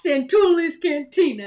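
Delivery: high-pitched Italian-accented speech. Praising Pandora's cantina, saying its name in an Italian voice. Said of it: "in an Italian voice".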